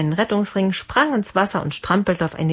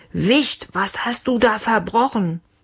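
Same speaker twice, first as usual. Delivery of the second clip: gentle roar; 2 semitones higher than usual. A father roars at the small boy who brought a burnt lump on deck. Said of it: "Leons Papa brüllte".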